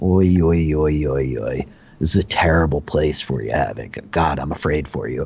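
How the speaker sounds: monster character voice of a golem. Voicing a golem that speaks to havoc in combat: voicing a golem. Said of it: "the golem goes".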